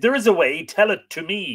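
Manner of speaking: crying out in anger. A master answers his servant, who says there is a way: angry cry. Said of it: "cried his master angrily".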